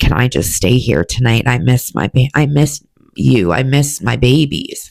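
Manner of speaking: weeping, tearful, crying, begging voice. Retelling walking in at their parents' and asking to stay: retelling a tearful plea. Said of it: "I walk in and I'm crying and I said".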